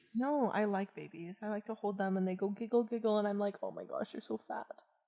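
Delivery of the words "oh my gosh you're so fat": put-on whispered, soft, breathy loving baby talk. Retelling what they say to giggling babies they hold, mock-loving tone. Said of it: "you say it in a loving tone of voice".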